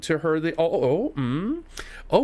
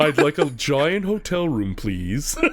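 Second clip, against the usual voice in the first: put-on tape-recorder-altered voice. Retelling a group chat joke about how the game character sounds: Kevin's Yak Bak voice from Home Alone 2. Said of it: "sound like Kevin booking the hotel through the Yak Bak thing".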